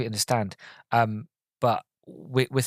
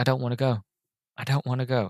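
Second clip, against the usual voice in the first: imitated crying, tearful voice. Retelling a scene where he stands at the fireplace: imitating someone crying. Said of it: "he just starts crying".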